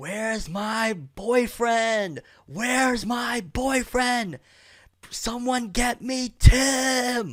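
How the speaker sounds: very high, very slow, loud acted wailing scream. Retelling waking in a hallway and hearing her: imitating her screaming. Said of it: "I start hearing her screaming".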